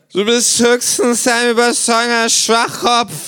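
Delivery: put-on very high-pitched, drunken, slurred voice. Narrator reading the kangaroo's insult, the Känguru slurring drunkenly. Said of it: "lallt das Känguru".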